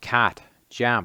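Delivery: Australian pronunciation. Reading out the same vowel sounds again: Australian pronunciation. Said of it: "then in the Australian equivalent".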